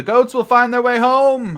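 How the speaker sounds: very loud, very high shout. Narrating a scene where a character calls out to the group: yelling. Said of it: "And he yells".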